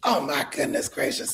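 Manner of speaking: put-on hoarse voice. Retelling how a woman reacted when you arrived as the writer, imitating Angie's hoarse voice. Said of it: "Angie always talked like this".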